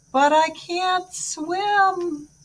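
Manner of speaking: resigned, eerie ghost voice, very high, very slow. Narrator reading a character's words heard from far away, in an eerie, resigned ghost voice. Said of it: "It was eerie, resigned, the voice of a ghost".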